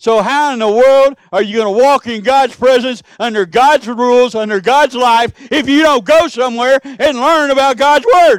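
loud, mad, exasperated, frustrated shouting. Speaking about learning God's Word, the speaker is mad and frustrated; yelling. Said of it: "I'm yelling. I'm mad. I'm frustrated".

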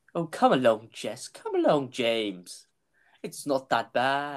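animated delivery with pitch swooping all over. Reading script lines aloud, doing the Doctor's voice actor's voice. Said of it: "I end up just doing his voice sometimes".

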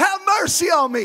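put-on loud male shout. Retelling a blind man calling out to Jesus: imitating a man shouting loudly. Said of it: "shouting at the top of his lungs".

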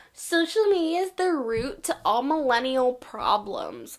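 loud condescending voice. Imitating someone who blames social media: imitating a condescending tone. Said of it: "in, like, a condescending tone".

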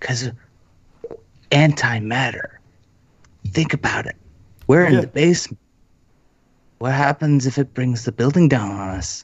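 hushed, half-whispered under the breath. In character, answering a companion who asks why he is half-whispering: half-whispering. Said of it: "I'm whispering".

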